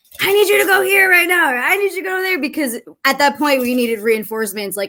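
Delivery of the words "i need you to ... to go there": mock high, urgent screaming. Retelling orders given to people coming onto the field: retelling own screaming. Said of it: "I'm screaming at them, like".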